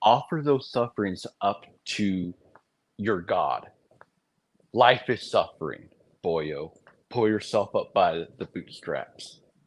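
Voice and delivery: deliberate, put-on sarcastic tone. Posing a question for the other speaker to explain: put-on sarcastic tone. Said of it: "I'm about to be sarcastic".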